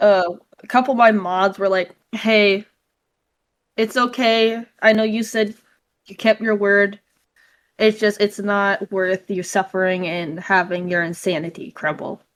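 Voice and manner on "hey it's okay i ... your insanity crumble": plain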